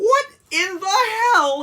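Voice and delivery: high voice cracking, delivered slowly. Complaining about a disc set's packaging, voice cracking. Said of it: "I just sounded like Seinfeld there".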